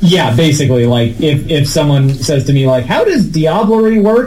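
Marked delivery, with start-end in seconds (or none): 2.8-4.3 put-on kid voice, much higher. Explaining a game's rules, the speaker imitates someone asking a question, in a kid voice. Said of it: "That was a good kid impression there".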